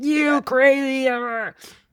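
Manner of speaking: acted very high-pitched, shrill screaming. Retelling how the crowd reacted to the whistle: imitating crowd screaming. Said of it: "the other half were screaming".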